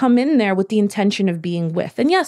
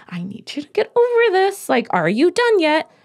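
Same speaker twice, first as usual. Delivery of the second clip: mock impatient voice, higher pitch; 9 semitones higher than usual. Acting out a parent soothing a struggling kid: imitating an impatient tone. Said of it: "You say it with this voice of".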